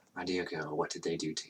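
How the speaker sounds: very quiet, grave, low, hushed murmur. Retelling a man's words to a girl he finds, low voice. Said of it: "like in a low voice".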